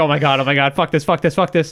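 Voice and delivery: ordinary talk, nothing marked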